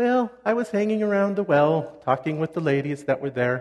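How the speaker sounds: voice pushed right up high. Speaker portrays Sapphira answering a question about her day, really high Sapphira voice. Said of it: "when I speak with a really high voice".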